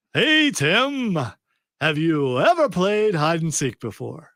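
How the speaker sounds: dead serious, gravely earnest, swooping, overly serious voice. Asking Tim a question, in as serious a voice as possible. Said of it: "in as serious of a voice as I possibly can".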